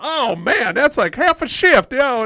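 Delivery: bad put-on southern drawl. Retelling what Stu said about arriving late: imitating Stu's southern drawl. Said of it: "this real southern, that's a really bad southern dr-".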